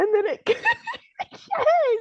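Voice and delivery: high-pitched, slow laughing through the words.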